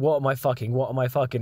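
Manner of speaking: normal talking voice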